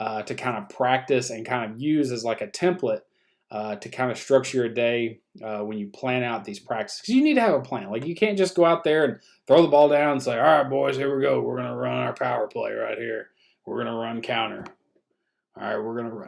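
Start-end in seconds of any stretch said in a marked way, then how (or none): 10.4-16.3 put-on gruff coach voice. Acting out a coach starting practice with a plan: put-on gruff coach voice. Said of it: "I try to do the grueling coach voice".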